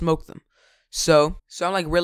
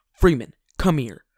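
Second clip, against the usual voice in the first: mock-angry, acted angry delivery; 2 semitones lower than usual. Retelling the principal calling him to the office, imitating a mad principal. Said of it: "he was mad".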